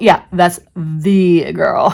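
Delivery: "the" said very slowly and loudly, stressed. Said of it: "We've all said stuff like that".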